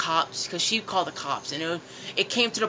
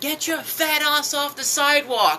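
loud, high-pitched shouted put-down; 9 semitones higher, 5 dB louder than usual. Retelling what a woman yelled at them as they rode by, retelling a woman's yell. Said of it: "she basically yelled at me".

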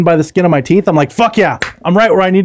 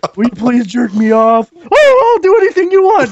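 squeaky, very high, swooping voice; 10 semitones higher than usual. Mocking game characters, the speaker slips into a Mickey Mouse voice. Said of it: "Why did you sound like Mickey Mouse that way?".

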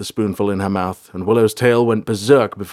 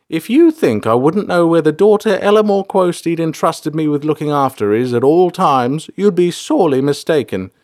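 proud, pitched-up, with an air of pride; 7 semitones higher, 4 dB louder than usual. Reading a novel, a carer answers the girl she looks after: proud retort. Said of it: "retorted with an air of pride".

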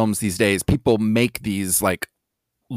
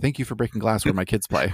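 put-on deadpan, dead-serious, quieter delivery; 5 dB quieter than usual. Speaker retelling a movie character's joke line, imitating deadpan delivery. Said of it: "like just this deadpan".

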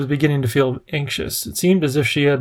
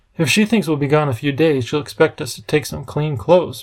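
plain reading voice

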